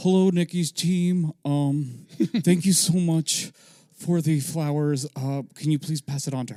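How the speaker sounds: put-on very loud, high, eager, nervous boy voice. Retelling a young man thanking Nikki's team for flowers, imitating a nervous boy. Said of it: "he talked like a boy".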